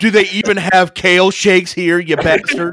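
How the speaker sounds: loud, high, play-acted snooty, condescending tone. Acting out what a man said about a convenience store, mock condescending. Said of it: "he even says it condescendingly".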